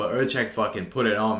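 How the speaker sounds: normal talking voice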